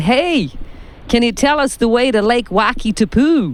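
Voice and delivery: high-pitched, phony put-on American accent. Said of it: "can I do a phony American accent?".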